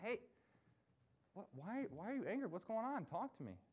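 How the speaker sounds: concerned fatherly tone, pitch lifted slightly. Retelling God's words to an angry Cain, acting out a concerned father. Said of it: "He talks like a concerned father to his distressed son".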